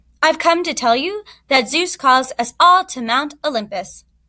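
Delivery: plain reading voice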